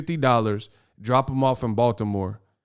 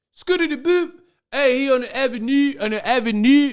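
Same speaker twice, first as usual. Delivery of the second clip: put-on heavy Baltimore accent, pitched way up high; 13 semitones higher, 3 dB louder than usual. Speaker acts out people in Baltimore spotting Ryan, in a thick Baltimore accent. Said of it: "that thick Baltimore accent".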